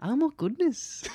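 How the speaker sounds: very high-pitched, strong, put-on Irish brogue. Retelling how a visiting relative reacted: imitating a strong irish accent. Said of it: "she was like".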